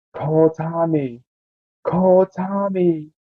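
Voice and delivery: ghostly, eerie, very slow, high half-whisper. Voicing the old suit on the wall, half-whispering to the viewers. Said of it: "whispering to us".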